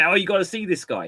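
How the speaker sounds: ordinary delivery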